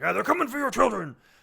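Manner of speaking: high, loud, bombastic delivery with rough edges. Imitating a brother's bombastic claims about children: imitating Alpha, bombastic. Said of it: "That's a pretty good impersonation".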